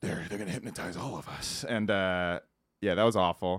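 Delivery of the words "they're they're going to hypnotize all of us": gritty superhero voice across the whole line. Retelling an actor's line from a bad sci-fi movie: Batman voice. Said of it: "he talks like Batman the whole time".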